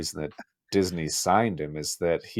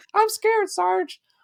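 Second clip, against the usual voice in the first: very high, squeaky little voice; 5 dB louder than usual. Retelling a scared turtle's voiceover line: high squeaky voice. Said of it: "in a high squeaky voice".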